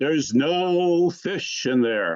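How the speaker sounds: big, grand pronouncement voice, no drawn out. Telling a joke, a voice answers the ice fishermen; big booming deep voice. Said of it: "big, booming, deep voice again".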